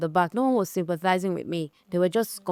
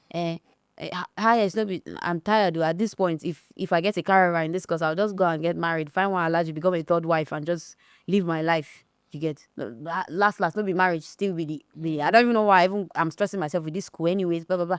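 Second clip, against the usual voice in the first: usual speaking voice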